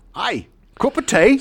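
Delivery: terrible put-on Cockney accent, very high pitched. Hearing how James played Requin with two lines, doing James's bad Cockney accent. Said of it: "Such a bad accent".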